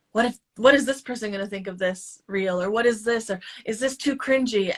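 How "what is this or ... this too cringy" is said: normal talking voice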